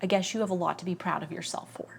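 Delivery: play-acted snippy, curt, offhand, dismissive tone. Retelling what her mom said on the way to a ceremony: imitating a snippy, dismissive tone. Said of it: "she was snippy with me".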